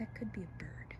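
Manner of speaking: hushed whisper.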